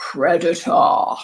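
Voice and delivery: very low, spooky, menacing voice. Teaching a vocabulary lesson, the speaker introduces the next word in a scary voice. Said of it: "we can do this one in a bit of a scary voice".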